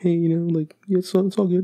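timid, soft-spoken voice. Describing a quiet friend who is good at Smash Bros: imitating Hector, meek and quiet. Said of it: "kinda meek".

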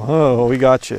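play-acted smug, self-satisfied tone. Imitating people who throw a verse at you: imitating a smug tone. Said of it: "just kind of smugly go".

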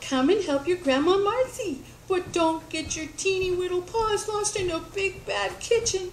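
put-on high-pitched, cooing baby talk. A woman coaxes a small animal to come to her, cooing. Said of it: "she cooed".

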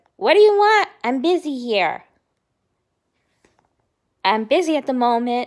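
acted, loud, rude and dismissive tone. Retelling what the ex said on the phone: imitating a rude reply. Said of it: "in a rude v-, way".

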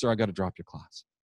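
put-on quiet tearful voice. Retelling how a quiet student in tears said she must drop the class: imitating Jenna, quiet and in tears. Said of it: "she's really quiet, ... one of those really soft-voiced girls. And she looks at me and she's in tears".

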